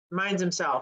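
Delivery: plain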